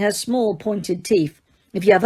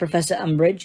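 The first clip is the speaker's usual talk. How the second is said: usual speaking voice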